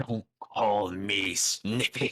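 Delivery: said with open anger. In a role-play game, the character nicknamed Snippy looks at the player: angry. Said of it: "He looks at you with anger once again".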